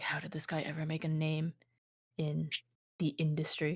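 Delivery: very quiet, muttered under the breath. Voicing a character reacting to a shrugging host: muttering under breath. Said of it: "I mutter under my breath the slightest bit".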